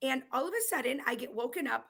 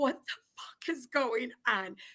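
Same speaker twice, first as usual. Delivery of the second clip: put-on panicked voice, lower and slower; 6 semitones higher than usual. Recalling the brother almost naked in front of the speaker, retelling freaking out. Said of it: "So I'm freaking out".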